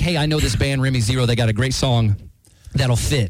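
plain

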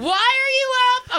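passionate, very high cry. Coaching someone on how to say a line, showing it: more passionate. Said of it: "You gotta put more passion in it".

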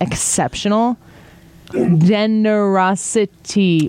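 slow, deliberate, carefully enunciated, spelled out word by word. Repeating list item six after saying he'll speak slowly, slow and deliberate. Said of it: "I'll speak slowly".

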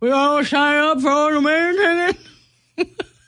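high voice speaking around a mouthful of food. Speaker picturing herself eating chili at Winterfest: talking with mouth full. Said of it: "That's me talking with food in my mouth".

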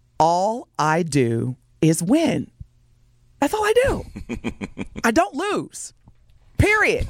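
slow, deliberate, word-by-word delivery. Telling a caller this for the last time, saying it slowly. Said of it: "I'm gonna say it slow".

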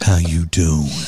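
put-on flirtatious podcast-host voice. Mocking how Travis talked to his niece: imitating Travis's club pickup voice. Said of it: "like he would the, somebody he's trying to pick up in a club".

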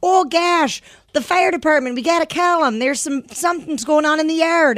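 put-on Minnesota-style accent. Describing the mom who narrates everything on a show, thick North Dakota Fargo accent. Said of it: "thick North Dakota Fargo accent".

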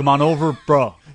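loud, put-on regular American accent, bro style. Asked to try a regular American accent, calling someone over: American accent. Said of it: "You've nailed it".

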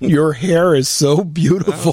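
put-on sucking-up tone. Joining in mocking a colleague's flattery: mock flattering kiss-up voice. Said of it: "Watching Andy kissing up to Hamp".

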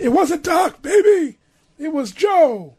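distinctive voice, very high pitch, every word dragged. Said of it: "no one else has that voice".

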